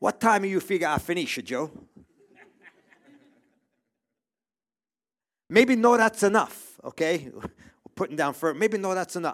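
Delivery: put-on Italian accent on English. The speaker demonstrates talking to Joe in an Italian accent. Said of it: "I can speak with an Italian accent better than anyone".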